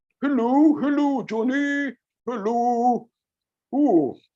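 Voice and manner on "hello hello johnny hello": high, slow voice through tightly pursed lips. Showing viewers how pursed lips change the voice, speaking with lips pursed. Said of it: "Can you try to speak with your lips like this?".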